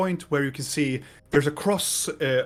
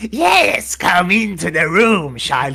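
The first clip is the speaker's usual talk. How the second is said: very loud booming voice, every word drawn out slowly; 4 semitones higher, 10 dB louder than usual. Retelling how the Akka voice carried on when his wife came in: Akka character voice. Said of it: "when I did the Akka voice".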